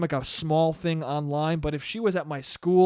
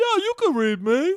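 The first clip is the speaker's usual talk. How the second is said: very high, dopey, dumb dude voice; 14 semitones higher, 4 dB louder than usual. Joking about a movie, the speaker voices Frankenstein answering Macaulay Culkin: Frankenstein voice. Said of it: "That's how he talked in the fucking movie".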